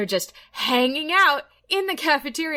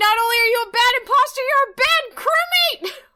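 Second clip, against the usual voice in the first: angry, mad, pitched-up voice; 12 semitones higher, 4 dB louder than usual. Retelling own words after being voted out: imitating being mad. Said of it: "And then I got mad and I'm like".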